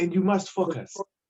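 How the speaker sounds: put-on thick, laid-on French accent. Quoting a man who kept telling the women to focus, thick French accent. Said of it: "He had a thick French accent".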